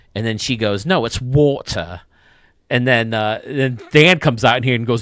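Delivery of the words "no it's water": put-on British accent, t in "water" nearly dropped. Retelling an actress's answer about her son saying water: put-on British accent. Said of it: "speak in a British accent or American?".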